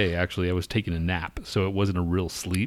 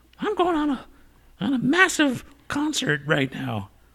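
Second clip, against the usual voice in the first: very high, swooping sing-song, voice swinging up and down. Mocking Emma, who may not be self-isolating: imitating Emma. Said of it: "Now I'm sounding like you, sounding like her".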